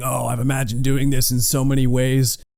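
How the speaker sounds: put-on smug, cocky, self-satisfied gloating taunt. Retelling a scene where she gloats over a captured man: imitating someone gloating. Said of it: "She's gloating".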